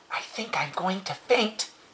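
high, soft, hushed whispering. Reading a story aloud, the narrator voices the pig's line to the old sheep, whispered. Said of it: "he whispered to the old sheep".

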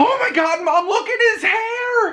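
put-on very high, shrill kid's scream, stretching "hair". Retelling what children in the store say: imitating a child screaming. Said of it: "the child normally screams".

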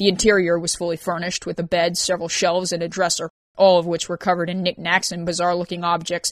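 plain reading voice

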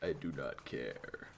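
very deep, soft, low-pitched voice. Answering a neighbour whose house is burning down, deep Kratos voice. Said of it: "As deep as my voice can go right now".

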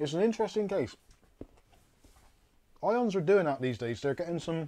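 talking with mouth full. Reading out chat messages while chewing chocolate: talking with mouth full of chocolate. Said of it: "I'm like a frickin' hamster".

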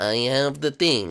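very low, gloating villain voice.

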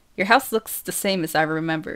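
ordinary delivery

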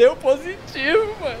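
speaking through tears. Answering a friend's question about a DNA test, crying. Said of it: "Por que tu tá chorando?".

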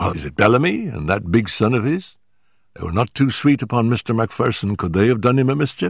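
ordinary delivery, nothing marked

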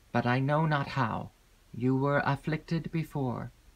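plain reading voice

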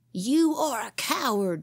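slow words forced out through gritted, clenched teeth. Narrator voicing Willie as he grips the other boy, through clenched teeth. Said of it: "said Willie through his clenched teeth".

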